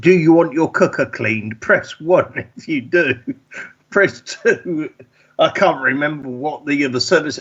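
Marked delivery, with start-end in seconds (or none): 0.0-4.9 automated phone menu, recorded message voice. Retelling a call received last year: imitating an automated phone message. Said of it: "and it was an automated thing".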